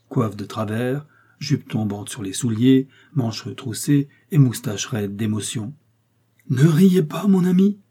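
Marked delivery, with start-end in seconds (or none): 6.5-7.7 deliberate, high, loud, slow drawn-out exclamation. D'artagnan addresses his friend, who burst out laughing, exclaiming. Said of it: "s'écria D'Artagnan".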